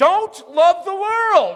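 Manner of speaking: very high, loud, slow yell.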